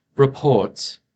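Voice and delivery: very regal, stately, royal-sounding delivery. A voice speaks from the orb, saying a single word in a very regal voice. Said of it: "very regal um, sounding voice".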